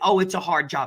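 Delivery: normal talking voice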